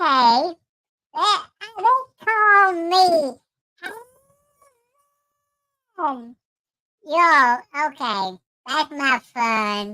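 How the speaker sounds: very high, swooping cartoon chipmunk voice. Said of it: "You all remember Alvin and the Chipmunks?".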